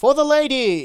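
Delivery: shrill, booming, very loud, high heroic battle cry. Game rule: hold a drink aloft and shout, heroic shout. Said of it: "shout for the lady in a heroic voice".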